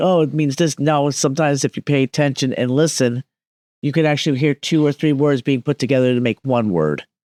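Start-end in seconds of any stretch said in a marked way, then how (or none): none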